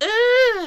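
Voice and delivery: very high, loud, long, drawn-out shrill squeal. Reading a story aloud, Rabbit reacts as a raindrop lands on his nose: squealed. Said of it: "he squealed".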